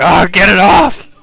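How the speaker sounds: very loud, agonized, drawn-out pained scream. Voicing a man attacked by Carbuncle, screaming in pain. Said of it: "screaming, like".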